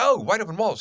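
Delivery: high, loud, cheery, bright, called-out delivery.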